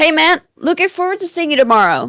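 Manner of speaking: high, rushed, eager and animated excitement. Reading a story aloud, a character greeting a friend: excited. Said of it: "Buck said excitedly".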